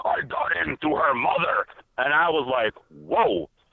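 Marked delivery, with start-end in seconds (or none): 0.0-1.7 put-on grown man demon voice. Retelling a deliverance, quoting what the demon said through a young lady, grown man demon voice. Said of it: "the voice came out of her mouth like a grown man demon".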